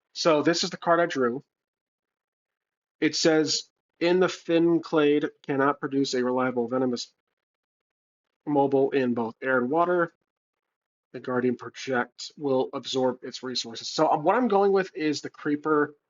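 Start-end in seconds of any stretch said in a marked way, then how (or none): none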